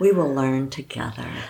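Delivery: quick, put-on tender, sugary sweetness. A wife retells what her husband said before they married, imitating him saying it sweetly. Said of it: "he said so sweetly".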